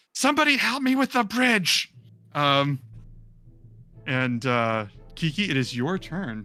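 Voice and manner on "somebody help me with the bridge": lizard creature voice, screaming. Voicing a lizardfolk calling out for help with the bridge: screaming lizardfolk. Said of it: "this lizard folk screaming".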